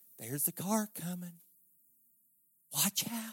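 hushed, very quiet half-whisper, barely audible. Mocking a too-quiet warning about a car: mock half-whisper.

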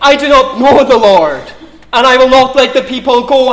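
loud, high-pitched scoffing mockery.

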